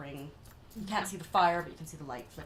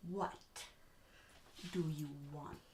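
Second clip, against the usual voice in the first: very slow, very quiet, drawn-out, hushed delivery; 9 dB quieter than usual. Meeting a blue stranger who just climbed up a ladder, speaking really slowly. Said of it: "I'm gonna speak really slowly".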